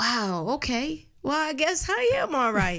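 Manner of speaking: mildly puzzled, amused.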